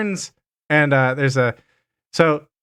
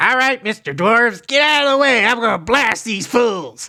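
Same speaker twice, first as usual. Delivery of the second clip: high, shouted gnome character voice; 8 semitones higher than usual. Voicing a gnome with a cannon yelling at the group: gnome character yelling. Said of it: "he yells out to, to the group".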